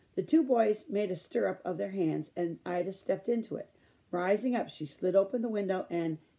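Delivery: plain reading voice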